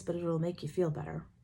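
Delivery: ordinary delivery, nothing marked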